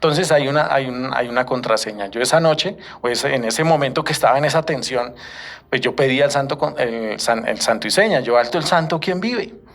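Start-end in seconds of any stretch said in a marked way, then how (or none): 8.2-9.5 put-on high, shaky, trembling, frightened voice. Retelling challenging approaching footsteps on night guard duty, retelling a trembling, fearful challenge. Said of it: "Con voz temblorosa y miedosa".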